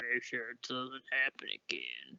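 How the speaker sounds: pitch dropped very low, very hushed and deep. Voicing the captain warning the group: deep captain voice. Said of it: "doing that deep of a voice".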